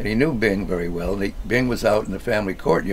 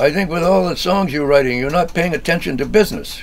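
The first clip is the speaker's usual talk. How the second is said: put-on German accent, raised and higher pitched; 9 semitones higher, 6 dB louder than usual. Retelling what the head of the company told Dad: Uncle Conrad's German accent. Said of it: "in his German accent".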